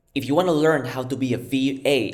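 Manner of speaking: ordinary delivery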